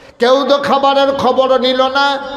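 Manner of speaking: put-on crying, wailing like child.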